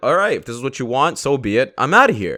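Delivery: ordinary talk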